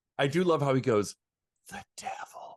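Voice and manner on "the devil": breathy, very hushed, barely voiced whisper. Imitating how he says the devil, whispered. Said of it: "Like whispers it".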